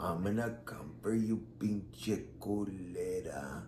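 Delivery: very quiet, slow drag, "culera" drawn out. Retelling voicemails from a man who left messages: imitating a dragging voice. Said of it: "his voice drags".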